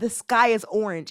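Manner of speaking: usual speaking voice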